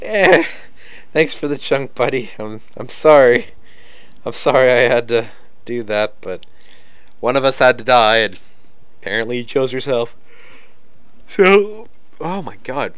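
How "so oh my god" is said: very slow, drawn-out yawn, pitched up. Speaker commenting on a fight, moving on to the next guy, yawning. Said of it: "Don't know why I'm yawning".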